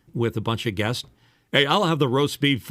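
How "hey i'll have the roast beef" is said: loud, trained radio announcer voice. A radio guy showing how his voice sounds at a dinner table, in radio announcer voice. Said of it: "when I use this voice".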